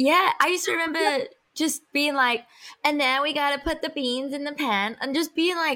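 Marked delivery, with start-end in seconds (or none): 2.8-4.9 put-on American accent. Retelling playing house with friends as a kid: imitating an american accent. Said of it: "American for some reason".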